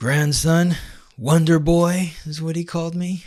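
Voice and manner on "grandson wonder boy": put-on Armenian-accented speech. Recalling what his grandfather called him, in his grandfather's thick Armenian accent. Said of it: "with his thick Armenian accent".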